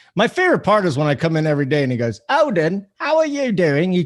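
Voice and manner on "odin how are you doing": put-on English accent, high-pitched and slow. Retelling how a friend greets him each day: imitating Simon's English accent. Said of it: "he comes in this, uh, English accent".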